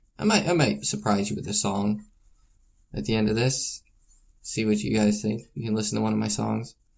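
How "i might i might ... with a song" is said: ordinary delivery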